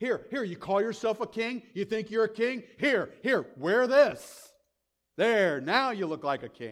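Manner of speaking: high, scornful, jeering mockery. Retelling how a crowd mocked a man called king, the speaker acts out mockery. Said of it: "They're mocking him".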